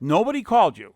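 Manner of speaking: put-on livid fury, very loud outburst. Retelling a friend's reaction to hearing nobody called back: imitating a furious Bob. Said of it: "Bob was furious".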